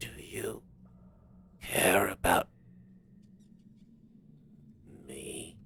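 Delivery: very quiet, barely-there, leaned-in murmur. The narrator voices Nertheos leaning over to Crevular: Nertheos speaking very quietly. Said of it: "says very quietly to you".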